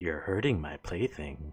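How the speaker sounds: put-on female voice. Narrator voicing a figure the players hear, in a female voice. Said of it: "you hear this voice that is female".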